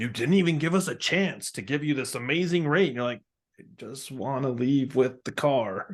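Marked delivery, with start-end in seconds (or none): 0.0-2.9 put-on demonic voice. Retelling how a car dealership reacts when you pay by check, demonic voice. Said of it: "the demonic voice is like".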